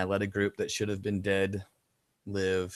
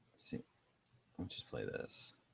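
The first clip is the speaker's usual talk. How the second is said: dejected, demoralized, very hushed, near-whispered mutter; 10 semitones lower, 15 dB quieter than usual. Player continuing a game, asking if viewers can hear it, demoralized. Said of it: "Can you hear the demoralization in my voice?".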